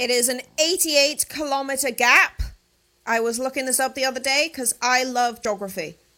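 sudden high shout. Speaking to a listener who then asks why they were screaming, shouting. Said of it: "why were you screaming at me".

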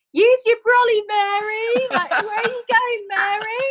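mock very high, drawn-out heckling shouts. Retelling how the audience shouted up at the stuck performer: imitating an audience shouting. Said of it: "the audience started shouting".

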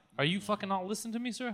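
put-on angry cashier voice. Acting out a cashier losing patience with a customer: acting as an angry cashier. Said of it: "I get why people get mad".

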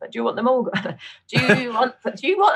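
put-on Northern English accent. Retelling what the doctor asked about the ovaries: imitating the doctor in a Northern accent. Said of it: "I wanna do Northern accent again".

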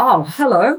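really shocked, startled, caught off guard. Retelling a surprise greeting from someone whose name was unknown: retelling own shocked reply. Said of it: "really shocked".

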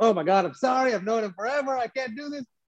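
play-acted giggles swallowed under the words. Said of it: "swallowing the laughter".

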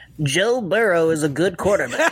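nasal, pinched-nose voice. Doing an impression on request by pinching the nose: Mike Burlon impression, pinched nose. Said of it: "do a Mike Burlon impression by pinching your nose".

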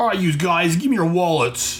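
put-on Australian accent. Retelling a story as Boomerang leaps down, Boomerang's put-on Australian accent. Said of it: "gotta remember to put on the accent".

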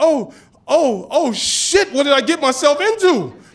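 slow, stammering, panicked, words stumbling. Retelling seeing a huge line of kids, imitating own panic. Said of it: "I'm panicking a little bit".

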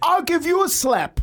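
play-acted shrill, very high-pitched shouting. Speaker recounts a taxi driver yelling back during their spat, retelling a taxi driver's yell. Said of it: "he's yelling at me".

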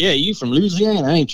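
put-on country accent. Imitating out-of-staters addressing a Louisiana local, country accent. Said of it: "country accent".

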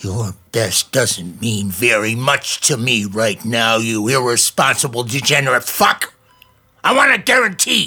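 irate, abusive furious yell, rising in pitch. Demanding a guarantee after a car crash: angry yelling. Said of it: "calm down, Uncle Al".

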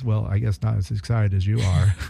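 put-on deadpan delivery. Retell the musician's answer to an excited interviewer's question, imitating a deadpan reply. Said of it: "he deadpan says".

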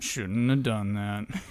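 very low, deep, dropped-down voice. Asked by another speaker to do the line as Mike Ehrmantraut. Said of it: "the Mike Ehrmantraut way?".

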